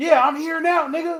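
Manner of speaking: shrill, very high-pitched, loud yell. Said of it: "he's yelling at the boat".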